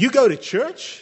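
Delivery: put-on taunting jeer, pitched very high, mocking. Retelling what a schoolmate said after seeing the speaker's sunday dress, mockingly.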